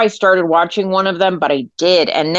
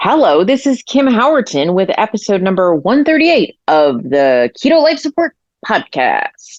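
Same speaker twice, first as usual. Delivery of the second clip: full-on, very announcery radio announcer voice. Podcast host opening an episode, in a very announcer-y voice. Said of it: "I got very announcery voice there".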